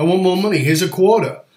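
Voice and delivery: ordinary talk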